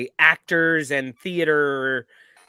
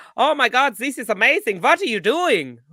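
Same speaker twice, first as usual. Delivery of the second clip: put-on, pitched-up German accent; 10 semitones higher, 4 dB louder than usual. Retelling what tourists said on the softball field: imitating german tourists' accent. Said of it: "that's how they sound".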